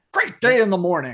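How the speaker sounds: loud, distressed blurt. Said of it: "He sounds upset".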